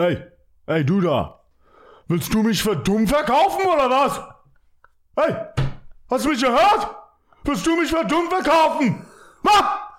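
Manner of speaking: very high, swooping German shouting. Doing a comedy bit of common German phrases: mock yelling in German. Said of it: "I yell in German".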